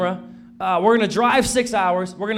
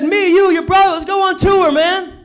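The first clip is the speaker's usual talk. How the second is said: very high, loud, animated excited burst; 10 semitones higher, 6 dB louder than usual. Reenacting a phone call from Charlie, a very animated guy: reenacting an animated phone call. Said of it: "I'm gonna try to, to reenact this phone call".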